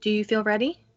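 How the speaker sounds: very gentle, tender, kindly tone. Voicing an abbot who asks a player if they feel ready: very gentle. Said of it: "just very gently goes".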